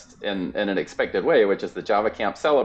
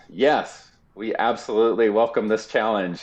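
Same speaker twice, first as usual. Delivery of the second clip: put-on, very confident voice. Retelling a site director's answer to a doubtful question, imitating a very confident voice. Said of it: "said in the most confident voice".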